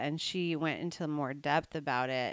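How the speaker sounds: plain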